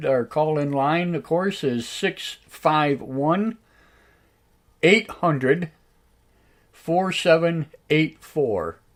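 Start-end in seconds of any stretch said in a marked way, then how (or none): 1.9-8.7 slow, spaced-out delivery with pauses between words. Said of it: "Tim, if you want to jot this down".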